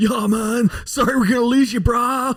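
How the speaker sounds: very high, slow, dragged-out surfer-dude voice. Imitating a boss who surfs saying goodbye: surfer dude voice. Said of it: "that's my best surfer dude I can do".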